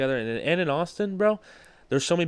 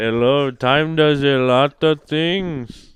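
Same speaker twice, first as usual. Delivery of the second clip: booming, loud put-on Indian accent; 10 dB louder than usual. Repeating the other speaker's remark, the speaker says it in an Indian accent. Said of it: "Indian accent".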